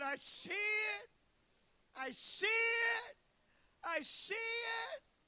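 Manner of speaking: very high, long, stretched, drawn-out scream. Retelling falling to the knees at a vision: reenacting own screaming. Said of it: "I started screaming".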